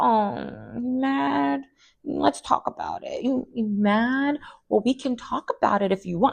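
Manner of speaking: calm, low-key, condescending, small, soft, high-pitched voice. Imitating Drew calmly needling someone in a confrontation: Drew's little voice. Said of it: "Her little voice".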